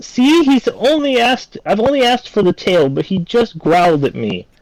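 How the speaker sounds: shrill, very high, accusing yell. A game master voices a woman pointing at a crouched figure in a tavern, yelling. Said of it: "she points and yells".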